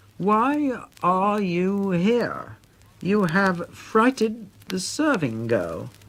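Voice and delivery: deliberate, very slow, distinct, carefully enunciated words. Retelling asking a priest's ghost why he is here; very slow and distinct. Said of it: "speaking very slowly and distinctly".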